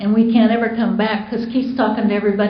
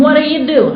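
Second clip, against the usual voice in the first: loud, high-pitched yell; 6 semitones higher, 3 dB louder than usual. Retelling yelling at a man across the table drinking from the carafe, retelling a yell. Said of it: "I just yelled at him".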